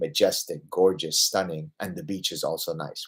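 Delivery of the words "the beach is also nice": normal talking voice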